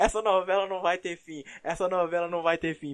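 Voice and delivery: talking through laughter. Recalling a story told three episodes back, laughing while talking. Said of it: "eu tô rindo, eu tô rindo com razão".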